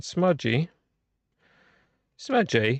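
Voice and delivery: put-on English accent. Checking a smudged CD disc, in a put-on English accent. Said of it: "Sound English when I talk like that".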